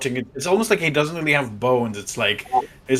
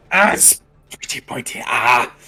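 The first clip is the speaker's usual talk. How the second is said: put-on character grunt, louder; 4 dB louder than usual. Game master voices a creature struck by a spear: grunting in Talmagin's voice. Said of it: "It grunts in Talmagin's voice, switching between Talmagin's voice and his own".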